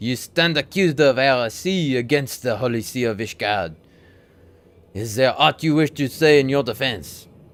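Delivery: put-on French accent. Reading a trial scene aloud, voicing Guillaume with a French accent. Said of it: "I think I gave him a French accent".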